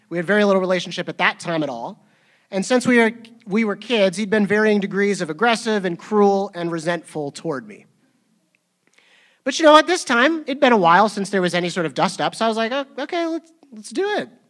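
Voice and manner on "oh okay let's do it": voice shooting up very high. Retelling agreeing to a meetup, the speaker's voice goes really high. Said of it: "I think my voice like went really high".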